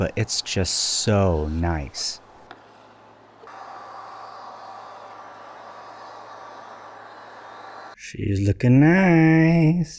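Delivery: very slow, drawn-out whisper. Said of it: "I don't know why I'm whispering".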